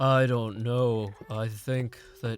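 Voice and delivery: slow, deep voice, dragged out low. Retrying an impression of a YouTuber: slow, deep Hypno impression. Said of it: "talks a lot more slowly and deeply".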